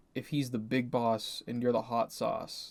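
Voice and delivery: ordinary talk, nothing marked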